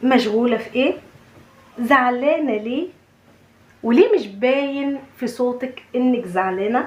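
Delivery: ordinary talk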